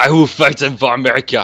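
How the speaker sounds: put-on Dutch accent. Imitating an actor playing the all-American Guile: Jean-Claude Van Damme voice. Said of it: "he's still got the really heavy Dutch accent".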